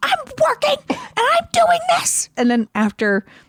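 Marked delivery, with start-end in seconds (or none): 0.0-2.3 very high, frantic shrieking scream. Retelling screaming at a child during a router reboot: imitating own past screaming.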